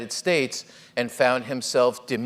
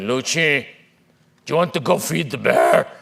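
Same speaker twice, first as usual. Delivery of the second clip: put-on tough macho voice; 7 dB louder than usual. Retelling a cousin's question to go feed the bear: imitating Hugo Millán's macho voice. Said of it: "Hugo Millán always talked like this".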